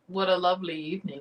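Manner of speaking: weird little put-on Louisiana accent. Retelling a voice heard during a spirit session: imitating a Louisiana accent. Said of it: "It was like a Louisiana accent".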